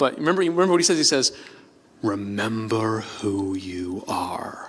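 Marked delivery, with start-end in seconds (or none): 2.0-4.7 very deep, hushed, slow, dropped way down and drawn out. Retelling what the father says when seen in a vision in the sky: deep Mufasa voice. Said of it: "I can imitate kind of the deep Mufasa voice".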